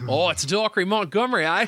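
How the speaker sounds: put-on Australian accent. Discussing an actor's name, a speaker does a Dacre Montgomery impression. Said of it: "That's actually pretty accurate to his voice".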